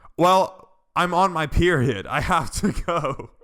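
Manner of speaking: shrill, very high, loud shout. Retelling what someone shouted in a grade-school class, imitating her shouting. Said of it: "she just shouts".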